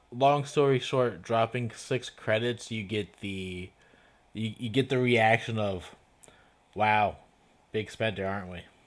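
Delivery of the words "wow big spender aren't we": heavy, dripping sarcasm. Voicing the reaction to a player dropping six credits: very sarcastic. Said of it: "Very sarcastically".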